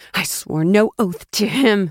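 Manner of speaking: slow, rage-choked hiss, voice nearly breaking. Narrator reads a woman answering an accusation of allegiance; Brielle hissing, nearly breaking with rage. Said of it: "her voice nearly breaking with rage".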